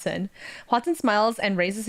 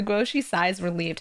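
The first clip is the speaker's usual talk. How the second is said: ordinary delivery, nothing marked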